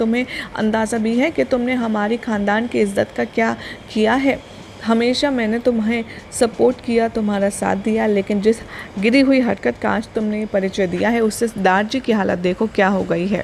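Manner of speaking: ordinary talk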